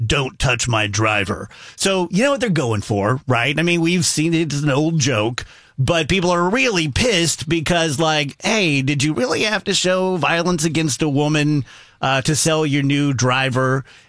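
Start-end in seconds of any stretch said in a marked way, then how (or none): 0.0-1.5 put-on low, menacing voice. Speaker retells a man in an ad standing over a woman; mock-menacing. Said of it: "menacingly says".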